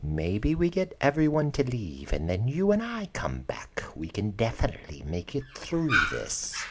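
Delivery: whispering. A game master voices a character pulling a player's character aside, whispering. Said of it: "she whispers to you".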